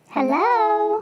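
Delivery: tiny high mouse voice, hello stretched out. Calling in on a phone call as the mouse: mouse voice. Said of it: "that's the mouse right now".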